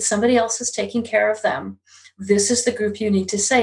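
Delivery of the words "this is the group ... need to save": normal talking voice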